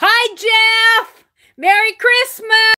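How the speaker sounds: loud high call, name drawn out. Greeting Jeff after he said he couldn't hear; raised voice. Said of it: "I kind of raised my voice there".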